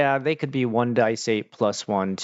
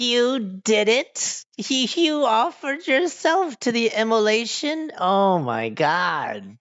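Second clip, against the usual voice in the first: very high, shocked and delighted, gleeful mad cackle; 11 semitones higher than usual. Game master voicing her as the players walk in: cackling madly. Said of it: "she starts cackling madly".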